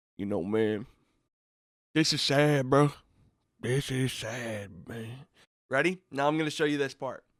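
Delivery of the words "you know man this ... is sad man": low, flat, one-note monotone. Telling listeners what the podcast host said before a clip, as a monotone Michael Irvin impression. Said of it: "he's talking all all monotone".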